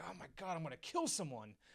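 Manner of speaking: mock loud muttering. Retelling a fed-up man at jury selection: imitating a loud mutter. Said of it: "just muttered just very loudly".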